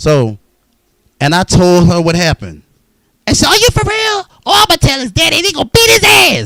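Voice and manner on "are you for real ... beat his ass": put-on high, loud motherly lady voice. Retelling what the lady said after hearing what happened: imitating Miss Helen loudly. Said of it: "That's exactly how she sounded when she said it".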